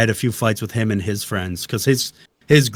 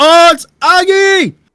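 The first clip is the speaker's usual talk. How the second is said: play-acted thrilled, very high, loud excited exclamation; 11 dB louder than usual. Retelling how another player recognized his voice: imitating an excited voice. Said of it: "His voice was so excited".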